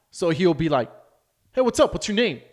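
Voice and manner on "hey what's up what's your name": high, pushy, aggressive, in-your-face delivery. Retelling how he now greets people: imitating someone greeting aggressively. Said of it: "very aggressive".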